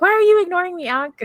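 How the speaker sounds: play-acted panic, very high, loud and frantic. Retelling how a character freaked out at being ignored: imitating someone freaking out. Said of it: "freaking out and going like".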